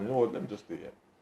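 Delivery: normal talking voice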